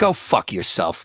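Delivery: acted furious, disgusted, sweary angry outburst. Retelling swearing at commercials while changing the channel: imitating own angry outburst. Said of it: "just so angry".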